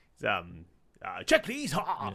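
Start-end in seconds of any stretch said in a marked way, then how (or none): 1.2-2.1 put-on posh toffee-nosed English accent, higher pitched. Acting out the comedian's bit again: imitating Stu Dolman's posh English bit. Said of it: "he's like a toffee top hat wearing English".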